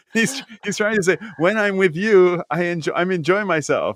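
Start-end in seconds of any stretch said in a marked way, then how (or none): 1.3-3.9 put-on mixed Japanese and Italian accent. Retelling what a man was trying to say, in an Italian accent. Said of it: "I like how you're doing this Italian accent".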